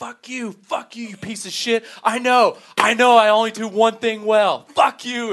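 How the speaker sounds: put-on scream. Retelling cracking while telling jokes, the speaker recounts screaming at a guy: retelling a scream. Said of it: "I just scream at this guy".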